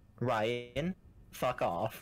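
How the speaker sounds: ordinary talk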